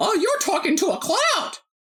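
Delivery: squeaky cartoon voice, way up high. Chatting with someone who says they talk to a mirror, in Mickey Mouse voice. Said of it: "I'm just doing the Mickey Mouse voice".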